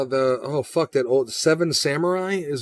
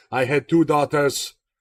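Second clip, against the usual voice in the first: heavy, strong put-on French accent. Quoting an actor's line from The Patriot to a fellow reviewer, put on a strong French accent. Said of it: "he's got that strong French accent".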